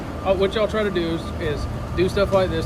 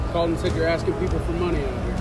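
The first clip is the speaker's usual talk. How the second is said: ordinary delivery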